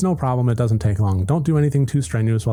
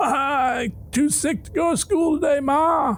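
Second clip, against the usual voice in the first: put-on sickly hoarse voice, very high pitched. Reading a story, a boy calls down to his mother: fake hoarse sickly voice. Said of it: "a hoarse and sickly edge added for effect".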